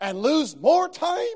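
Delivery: very loud, high, explosive outburst. Narrator reads the son's retort when his father wants to help a stranger: exploding in an outburst. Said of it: "exploded the son".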